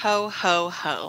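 put-on sarcastic character voice. A co-host, just introduced by the podcast host, greets listeners in a sarcastic Santa voice. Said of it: "like sarcastic Santa".

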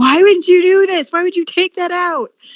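very high, shrill, loud screaming outburst. A speaker recalls screaming at their cat while reading the script, retelling screaming at cat. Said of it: "like screamed".

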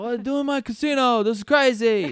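very loud, high, botched yelling voice. Trying an Al Pacino impression of a casino scene: bad Al Pacino impression. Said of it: "I can't do a fucking Al Pacino".

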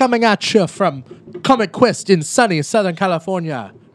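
Scottish-accented speech. Trying out accents while giving the show intro; Scottish accent. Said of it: "it's Scottish".

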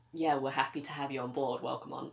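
normal talking voice

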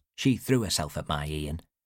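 usual speaking voice

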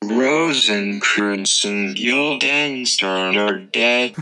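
flat, monotone robot voice. Announcing next week's play title, in a flat robot voice. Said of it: "Flat effect".

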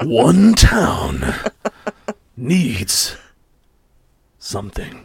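epic, swooping movie trailer announcer voice. Co-hosts discuss a friend's trailer voice; one tries it: movie trailer voiceover voice. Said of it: "The trailer voice".

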